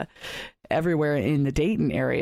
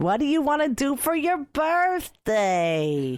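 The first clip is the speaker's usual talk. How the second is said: very high-pitched voice; 11 semitones higher than usual. Redoing her impression of her mother, who is listening, imitating Cheryl, her mom. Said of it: "I did my impressions of my mom".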